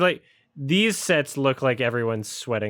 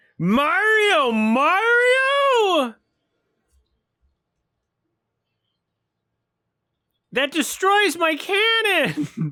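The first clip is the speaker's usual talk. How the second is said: over-the-top, very high, drawn-out crazy reaction; 5 dB louder than usual. Redoing a reaction to the game, more crazily: put-on crazier reaction. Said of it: "react crazier".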